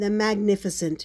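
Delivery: ordinary delivery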